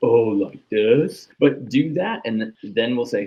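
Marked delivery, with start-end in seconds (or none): 0.0-1.3 play-acted, loud, over-the-top sarcastic tone. Acting out an athlete exaggerating a change a coach asked for: mock sarcastic. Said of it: "you seem like you're being sarcastic".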